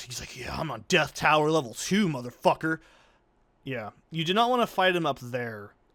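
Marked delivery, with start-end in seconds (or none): 0.4-2.8 put-on pumped-up, hyped-up voice. Voicing a game enemy wandering around: imitating a pumped-up enemy. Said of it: "He's just pumped".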